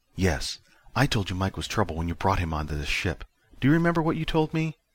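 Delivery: ordinary delivery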